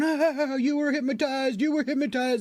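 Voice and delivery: mock very high words spoken through belly laughs. Retelling what the boss said after the hypnosis: imitating boss belly laughing while talking. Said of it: "starts belly laughing and doubling over, going".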